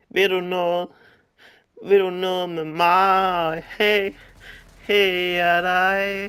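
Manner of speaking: put-on groaning. Talking to another speaker who asked to play along: fake moaning. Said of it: "Hvorfor skal du stønne, når du siger det?".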